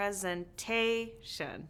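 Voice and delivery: presentation, stress on third syllable -ta-. Asking which syllable is emphasized: stress on TA in presentation. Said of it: "The third".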